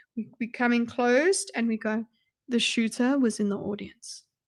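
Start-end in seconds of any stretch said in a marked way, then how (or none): 2.5-4.3 grave serious tone, much quieter. Demonstrating how they come in closed to deliver a claim, very serious voice. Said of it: "we've now got the the very serious voice".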